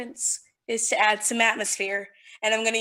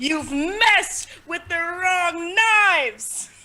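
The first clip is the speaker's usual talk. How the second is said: huge, resounding, booming magical voice, pitched up; 7 semitones higher, 4 dB louder than usual. A player casts thaumaturgy to make a voice speak, in a big booming voice. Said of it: "make a big booming voice say".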